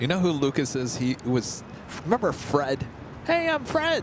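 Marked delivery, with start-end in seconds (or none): 3.2-4.0 very high-pitched voice, pushed way up. Reminding someone who Lucas was by doing the high-pitched Fred voice. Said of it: "with a high-pitched voice".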